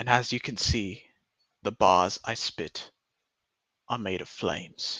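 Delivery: fake English accent held throughout. Speaker doing a bit before dropping the accent, in a put-on English accent. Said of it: "I'm gonna stop this accent now".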